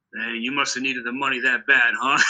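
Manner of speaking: ordinary delivery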